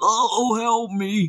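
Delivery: pained outcry, as if hurt. Telling a story about Dad's fight, the speaker voices the other man: mock-crying out as Cletus. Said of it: "and Cletus cried".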